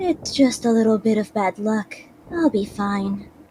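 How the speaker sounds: heavenly, angel-like voice. Telling a story and voicing her reassuring thought, in an angelic voice. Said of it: "how could I do an angelic voice?".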